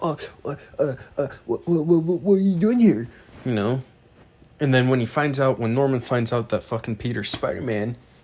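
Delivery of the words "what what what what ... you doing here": halting, pitched-up stammering with repeated sounds. Retelling a show scene where Peter Parker finds Norman: imitating Peter Parker stammering. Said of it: "He's like".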